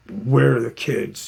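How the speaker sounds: harsh, stern, rough, hostile and aggressive tone. Retelling a husband repeating where the kids are: imitating an aggressive demand. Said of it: "Just real aggressive".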